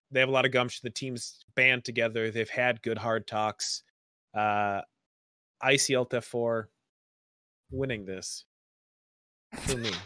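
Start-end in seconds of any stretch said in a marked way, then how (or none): 4.3-9.9 really slow, drawn out, halting, broken delivery. Naming the team they expect to win for them, said really slowly. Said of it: "You said that really slowly".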